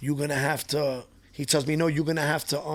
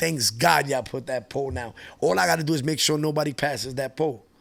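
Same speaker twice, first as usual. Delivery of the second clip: ordinary talk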